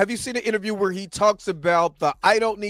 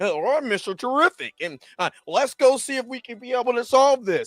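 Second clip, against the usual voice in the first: put-on nerdy voice, higher; 4 semitones higher than usual. Mocking how the CW version of the hero talks: CW Mister Terrific impression. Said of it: "'Cause the C W counterpart".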